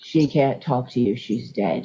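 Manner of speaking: put-on very low, deep voice. Retelling what someone said to her, in an imitated deep voice. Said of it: "Deep voice say".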